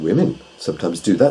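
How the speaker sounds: usual speaking voice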